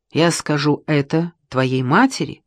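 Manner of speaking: usual speaking voice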